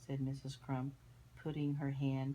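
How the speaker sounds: plain reading voice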